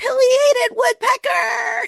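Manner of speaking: play-acted, very high scream of sheer joy. Retelling spotting a pileated woodpecker in the backyard: imitating her own scream. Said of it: "I just screamed".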